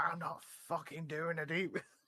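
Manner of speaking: acted high, drawn-out scream. Retelling how a woman screamed at the supervisor, imitating her screaming. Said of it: "she's screaming at the supervisor".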